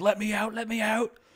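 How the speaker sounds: high, panicked, pleading voice. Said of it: "basically had a panic attack".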